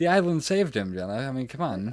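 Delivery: snide, mocking, sarcastic tone with swooping pitch. Answering another speaker's doubt about a survival on the show: sarcastic. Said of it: "that sounds sarcastic".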